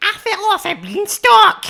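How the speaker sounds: shrill, swooping, very high, loud, slow squeal. Doing an impression for the other speaker: Jimmy Krankie impression. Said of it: "my impression of Jimmy Krankie after he fell".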